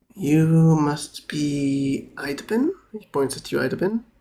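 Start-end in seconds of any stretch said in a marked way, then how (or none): 0.1-2.6 unhurried, very slow and calm bishop voice. Voicing a pale bishop welcoming the group: very calm bishop voice. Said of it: "as he says very calmly".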